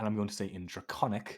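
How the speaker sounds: ordinary talk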